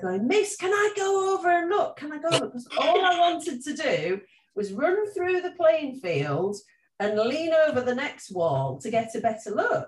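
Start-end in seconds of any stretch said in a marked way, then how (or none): 0.3-2.5 put-on, very high-pitched calling out. Retelling asking the dinner lady to go look: imitating own past shout. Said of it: "I was shouting at her".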